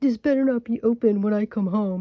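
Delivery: loud, grumbling mumble. Describing how he locked the door, the speaker retells his loud mumble. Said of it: "mumble really loudly".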